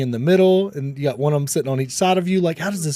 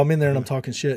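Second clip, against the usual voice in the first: normal talking voice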